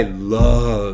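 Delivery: emphasizing the word "love". Showing how emphasis changes a sentence's meaning, stress on "love". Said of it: "changing the vocal emphasis on each word".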